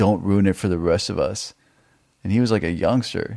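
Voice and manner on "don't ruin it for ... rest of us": ordinary delivery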